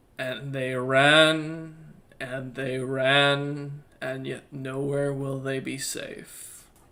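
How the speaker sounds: deep creature voice, "ran" drawn out. Narrating the party's escape, the speaker voices a creature in the distance in a deep creature voice. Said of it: "A chuckle from a deep voice of a, some sort of creature".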